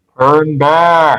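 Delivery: loud, menacing, echoing voice. Calling out in character to warn the others away: really ominous and loud voice. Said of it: "make my voice really ominous and loud".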